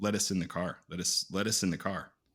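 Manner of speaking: ordinary talk, nothing marked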